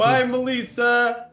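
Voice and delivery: screaming, shouting loudly. Calling goodbye to Melissa, who is walking away: screaming goodbye. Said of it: "I'm just gonna scream".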